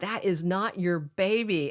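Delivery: ordinary talk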